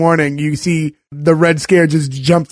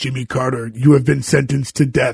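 very dark, mechanical robot voice; 3 semitones lower, 3 dB quieter than usual. Recapping a scene, the speaker quotes the robot in a very dark robotic voice. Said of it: "like very dark robotic voice".

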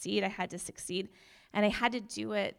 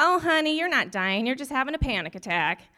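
put-on very loud, swooping, snarky older-nurse voice; 4 semitones higher, 9 dB louder than usual. Retelling what a nurse said while passing by: imitating a snarky older nurse. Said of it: "snarky older nurse walks by me, and she goes".

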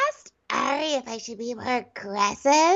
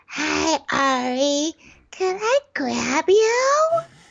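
put-on weird little-girl voice, very slow, drawn out. Imitating how someone slips into a weird little-girl voice. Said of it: "she goes into this weird little girl and she's like".

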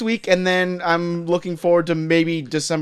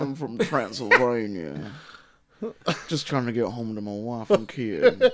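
put-on Southern Alabama accent in a vampire voice; 6 semitones lower, 5 dB quieter than usual. Joking about Nicolas Cage playing Dracula: Nicolas Cage Dracula, Alabama accent. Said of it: "I hope he has an Alabama accent".

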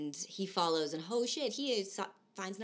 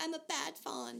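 mock very high, soft, tearful whimpering and crying; 9 semitones higher, 7 dB quieter than usual. Retelling the story where the fawn starts crying after tea: mock crying. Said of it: "and then he starts crying".

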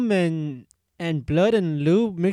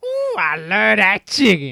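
throaty put-on voice, swooping, pushed from throat; 3 semitones higher, 6 dB louder than usual. Joking about loving fried chicken: put-on throaty character voice. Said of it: "completely changed his voice for that".

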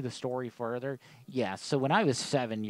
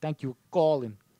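loud, put-on New York accent; 4 semitones higher, 6 dB louder than usual. Repeating a voicemail greeting just heard: imitating a New York accent. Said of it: "That dude's got the fucking coolest New York accent".

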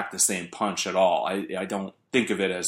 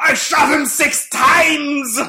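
shrill, very high, very loud put-on voice; 11 dB louder than usual. Segueing into an impression on a show: Donald Pleasence impression. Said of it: "my impression of Donald Pleasance".

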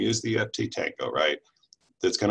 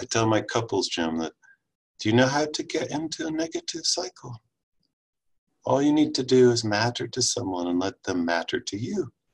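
put-on woman's British accent, swooping and animated; 3 semitones higher than usual. Quoting what a woman tells couples, imitating Allison Lee's British accent. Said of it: "in her British accent".

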